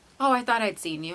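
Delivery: ordinary talk, nothing marked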